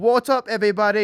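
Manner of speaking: horrible fake British accent. Imitating him dropping in with a greeting, horrible British accent. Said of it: "That's a horrible British accent".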